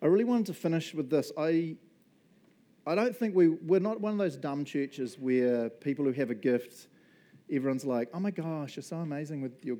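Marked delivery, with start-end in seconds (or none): 8.1-9.8 put-on Valley Girl accent. Mocking churchgoers who gush over gifted people: valley girl voice. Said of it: "I don't know why I just meant Valley Girl".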